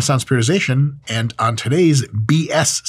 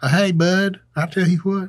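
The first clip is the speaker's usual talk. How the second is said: put-on Southern accent, pitched up; 4 semitones higher than usual. Speaker tries an accent for viewers to judge in the comments, put-on southern accent. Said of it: "I have way more things to say in Southern".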